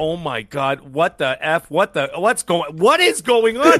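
shocked, frantic swearing outburst with rising pitch. Retelling lying in bed with the phone going berserk: retelling shocked cursing. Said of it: "of course I'm cursing nonstop".

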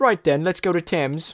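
cheerful put-on British accent. Retelling a plan made with friends, in a put-on british accent. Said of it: "I made you British for some reason".

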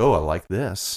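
slow, pleased, delighted, wondering tone. Retelling how early guitar players reacted to reverb: imitating delighted early guitar players. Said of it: "With that exact tone of voice".

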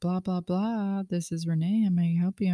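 smooth professional telephone voice. Retelling how they answer the business phone: professional phone voice. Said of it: "he does not like my professional voice".

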